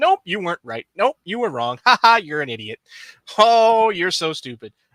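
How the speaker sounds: exaggerated put-on taunting tone. Retelling how he keeps shooting down fans' Ahsoka theories, exaggerated mock taunting. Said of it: "I'm zhuzhing it up for the content".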